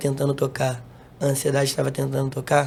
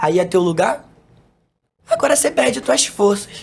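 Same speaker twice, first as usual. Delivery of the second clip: put-on shouting, higher pitch and louder; 7 semitones higher, 7 dB louder than usual. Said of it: "eu vi o inimigo gritando".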